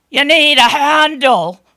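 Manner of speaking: very loud, theatrical, staged voice. Retelling a library guard's answer about the bathroom, in his staged loud voice. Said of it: "In his staged, loud voice".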